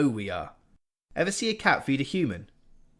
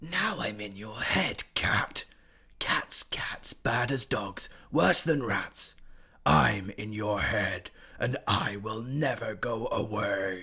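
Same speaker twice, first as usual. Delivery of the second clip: tiny, distant hissing voice, each word hissed; 4 semitones lower, 3 dB quieter than usual. Narrator reading a voice speaking inside a cat's head: hissing Spider voice. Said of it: ""It is I. I am [name]." / "How the humans shout," hissed a tiny voice in his head. / hissed a tiny voice in his head".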